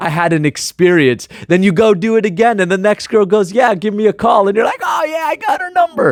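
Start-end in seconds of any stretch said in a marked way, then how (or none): 4.8-6.1 squeaky, thrilled, very high excited squeal. Acting out a guy who just got a girl's number, voice going high. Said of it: "see my voice going high right now".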